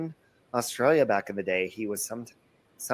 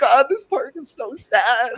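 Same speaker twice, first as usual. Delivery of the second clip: mock drunken sobbing, higher and louder; 13 semitones higher, 8 dB louder than usual. Retelling crying drunk on a park bench, talking to God: imitating own drunk crying. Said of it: "I was talking to God all drunk on the bench".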